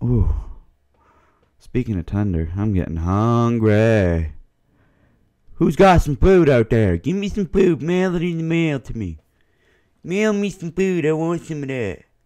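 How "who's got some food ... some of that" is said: very high, pleading beggar voice. Speaker addressing the audience, doing an impression of a homeless person. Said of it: "That's my impression of a homeless person".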